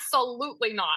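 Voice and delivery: ordinary talk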